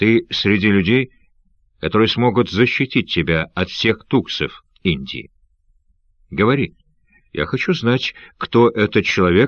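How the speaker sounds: ordinary delivery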